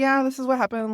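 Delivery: play-acted flat, offhand, matter-of-fact, high-pitched. Retelling what was said to coworkers: imitating a matter-of-fact tone. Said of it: "I said it so matter of fact".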